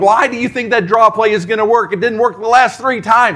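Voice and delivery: high-pitched, hard shouting yell. A Vikings fan recalls shouting at the television, retelling yelling at the TV. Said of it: "And so I'm yelling".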